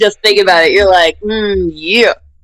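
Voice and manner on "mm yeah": aroused moan. Imitating the other speaker recalling a rejection: mock aroused moan. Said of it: "You sound like you're about to get wet. ... You're like".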